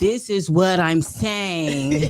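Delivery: slow, condescending, over-explaining voice.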